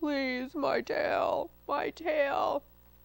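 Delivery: very slow moan. A fox, told to be quiet, lowers his voice, lowered voice, moaning. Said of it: "The fox lowered his voice to a moan".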